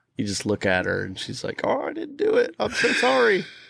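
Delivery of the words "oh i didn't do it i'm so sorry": put-on very high, slow, weepy, teary child's voice. Retelling how the daughter apologizes when looked at: imitating a crying daughter. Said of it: "She'll just start crying. ... she's like".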